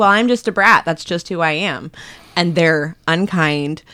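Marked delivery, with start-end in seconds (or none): none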